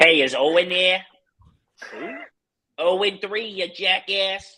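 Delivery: loud, high, mocking put-on Boston accent. Retelling calls from Boston to the restaurant during the playoffs: mocking Boston accent. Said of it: "call with that stupid ass accent".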